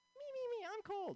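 shrill, very high-pitched woman voice. Doing a stand-up bit, impression of women. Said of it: "do you wanna hear my impression of women".

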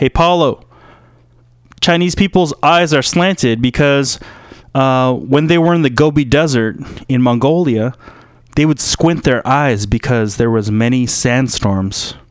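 plain

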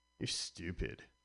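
put-on whispered, hushed, breathy teenage voice, jabbing. Doing an impression of a teenager's winning debate-club argument, teenager impression. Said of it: "an impression of a teenager and his winning argument".

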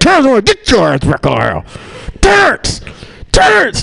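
mock very high swooping angry yell through clenched teeth. Retelling a mother shouting at her son, imitating mom's angry shout through teeth. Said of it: "the words go through their teeth".

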